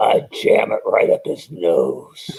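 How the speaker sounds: put-on gravelly, rough drill sergeant voice. Retelling what Sergeant Slaughter said on stage: Sergeant Slaughter's gravelly voice. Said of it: "it was Sarge's gravelly voice".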